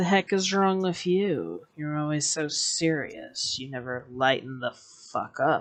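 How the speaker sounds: eerie, otherworldly, almost unearthly ethereal voice. The storyteller voices a woman finally answering after a silence, in an ethereal voice. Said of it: "it almost sounds kind of ethereal".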